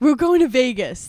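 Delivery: loud, chirpy, peppy announcer voice, acted out. Retelling a flight announcement about a birthday, imitating a peppy announcer. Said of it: "they're peppy".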